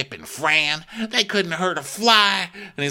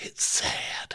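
soft, hushed, breathy whisper. Retelling how a woman answered a question, imitating someone whispering. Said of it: "she whispers it".

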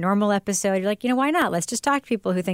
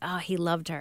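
mystical fortune-teller, psychic-style pronouncing voice; 2 semitones lower, 8 dB quieter than usual. Retelling how a woman on the radio sounded: imitating a psychic's voice. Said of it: "she sounded like a psychic would sound".

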